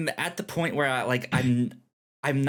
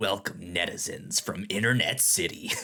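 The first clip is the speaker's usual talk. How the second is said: very low, very deep, menacing and threatening voice; 7 semitones lower, 4 dB quieter than usual. Greeting the inhabitants of internet city on air, deep threatening voice. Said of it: "Your voice is so deep when you do that that it sounds threatening".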